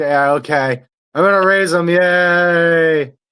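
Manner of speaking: slow, drawn-out, half-hearted, unimpressed delivery. Retelling John Cena sitting through an emotional moment: imitating John Cena, unenthused. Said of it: "he's just sitting there like".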